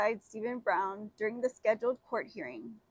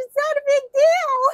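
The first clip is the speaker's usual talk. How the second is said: mocking put-on cartoon mouse voice; 14 dB louder than usual. Mocking what he said in court, in a Mickey Mouse voice. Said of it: "Like he said in his Mickey Mouse voice".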